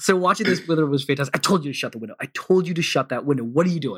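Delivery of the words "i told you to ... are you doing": mock angry, scolding tone. Acting out her reaction to a girl with her window open, mock-angry scolding. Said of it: "She's mad that the girl has her window open".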